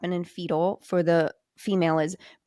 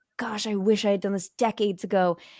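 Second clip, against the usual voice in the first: play-acted tearful, weepy, crying delivery. Retelling what a crying woman said to her, imitating her in tears. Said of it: "she's crying and she's like".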